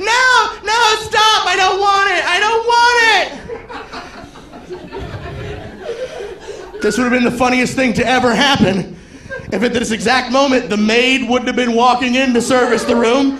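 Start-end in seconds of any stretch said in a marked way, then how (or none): 0.0-6.8 put-on faint, very high cries of distress. Retelling throwing something over a woman's head, imitating faint distress calls. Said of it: "faint distress calls of a woman".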